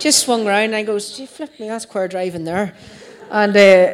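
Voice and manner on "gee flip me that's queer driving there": ordinary talk, nothing marked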